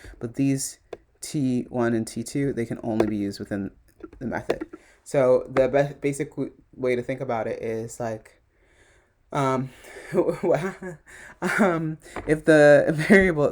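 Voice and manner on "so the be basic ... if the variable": slow speech through laughter. Explaining variable scope in code: laughing while explaining. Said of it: "I'm laughing because I thought of a different version".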